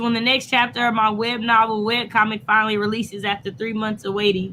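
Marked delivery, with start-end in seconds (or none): none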